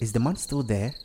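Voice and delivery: ordinary talk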